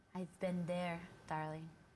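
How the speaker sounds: soft-spoken, hushed vampire voice. A vampire behind a locked bedroom door on a boat speaks up: soft vampire voice. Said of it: "you hear a soft voice".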